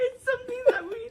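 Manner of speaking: high, loud giggling, laughing through the words.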